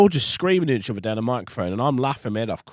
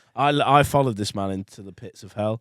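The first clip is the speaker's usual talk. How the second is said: ordinary talk, nothing marked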